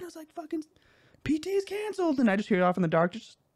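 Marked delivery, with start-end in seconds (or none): 0.3-2.2 put-on very high shout. Recalling yelling out the door to his buddy: retelling a yell. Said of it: "I yelled out the door".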